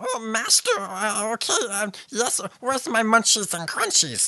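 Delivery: very high, strange little creature voice. Imitating Gurgi from the film, which sounds like Andy Serkis: Gurgi voice like Andy Serkis. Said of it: "Gurgi sounds like Andy Serkis. It's so, I mean, he's like".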